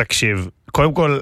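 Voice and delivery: rough, hoarse voice.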